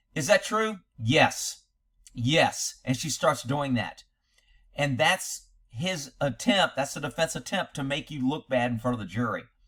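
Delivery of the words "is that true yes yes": acted curt, terse, frustrated short replies. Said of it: "her answers are becoming more curt or very short".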